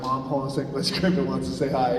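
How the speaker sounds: ordinary talk, nothing marked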